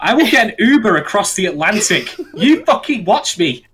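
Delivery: mock menacing tone.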